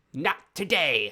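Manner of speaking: booming, very loud gnome voice. Narrating a scene, the speaker voices a gnome who looks at you, in a very gnomish voice. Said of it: "in in a very gnomish voice".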